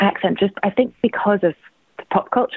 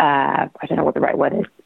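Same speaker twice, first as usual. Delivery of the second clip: ordinary talk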